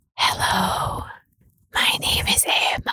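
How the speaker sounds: mock ASMR-style whisper. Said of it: "do some for the listeners now".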